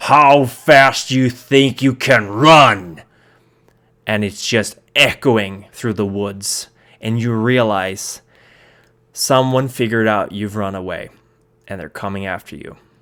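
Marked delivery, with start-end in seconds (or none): 0.0-3.0 huge, very loud, slow, booming monster bellow. Storyteller voices a pursuer calling after the five runaways, booming monstrous voice. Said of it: "booming, loud, monstrous voice".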